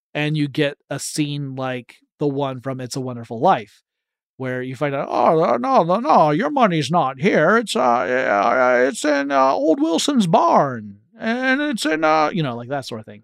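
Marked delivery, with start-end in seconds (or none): 5.1-12.3 terrible, high-pitched, drawn-out, stumbling drawl. Picturing a bank run from It's a Wonderful Life: terrible Jimmy Stewart impression. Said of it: "That's a terrible Jimmy Stewart".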